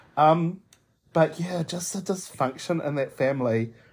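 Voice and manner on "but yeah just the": ordinary delivery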